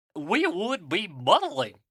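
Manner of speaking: drawn-out cartoon voice with swooping pitch. Attempting a Goofy impression after admitting he can't do one well: Goofy voice. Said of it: "here's a different Goofy quote".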